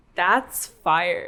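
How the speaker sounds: put-on California Valley girl accent. Saying a line when asked to: Valley girl accent. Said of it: "Say "That's fire" in your Valley girl accent".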